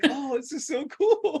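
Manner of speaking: mock very high, thrilled, excited gushing. Retelling a scene about a big marshmallow, imitating its happy excitement. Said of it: "He's so happy too".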